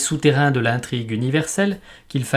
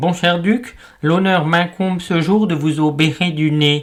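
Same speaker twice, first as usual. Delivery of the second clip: put-on nasal voice, as through a stuffed-up nose; 3 semitones higher, 3 dB louder than usual. Someone with a bad cold greets a noble patient, speaking through the nose. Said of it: "Ainsi prononcé en parlant du nez".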